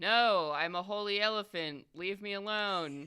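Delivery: deadpan, plain, matter-of-fact, factual delivery. Answering a question in character during a game: matter-of-fact tone. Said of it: "a matter-of-fact tone".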